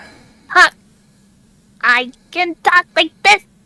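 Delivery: put-on anime character voice, high-pitched. Asked to let the others hear it, the speaker talks in a high-pitched anime character voice. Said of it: "I like that voice actually".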